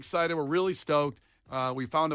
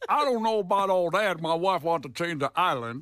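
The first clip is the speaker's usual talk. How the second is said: put-on Louisiana accent; 2 semitones higher, 3 dB louder than usual. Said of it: "I became the Cajun chef all of a sudden".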